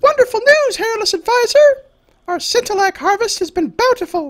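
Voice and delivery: very high, excited squealing voice. Narrator voicing an aide who greets the hairless advisor, squealing voice. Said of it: "The aide squeals".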